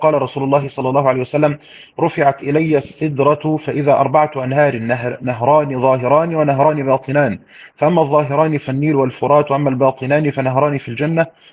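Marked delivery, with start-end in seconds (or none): none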